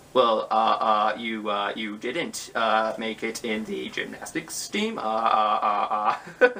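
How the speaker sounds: drawn-out delivery with uh on every word. Retelling a movie character's reaction: terrible Jeff Goldblum impression. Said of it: "That was a terrible impression".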